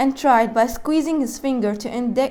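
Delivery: ordinary delivery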